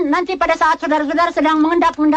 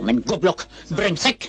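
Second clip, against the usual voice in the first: low, distant-sounding, angry harsh voice. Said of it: "Kok marah-marah sih?".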